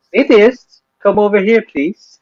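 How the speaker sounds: high, put-on British accent. Quoting a sketch a viewer mentioned, doing a Rowan Atkinson British accent. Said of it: "Oh, my British accent".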